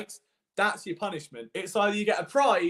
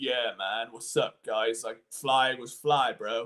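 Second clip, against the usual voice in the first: deep, lower macho bro voice; 7 semitones lower than usual. Speaker demonstrating how a low-voiced guy sounds, put-on Chad bro voice. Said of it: "you got quite a Chad voice".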